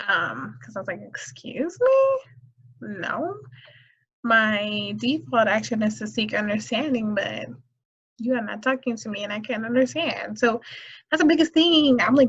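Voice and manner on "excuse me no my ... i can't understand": usual speaking voice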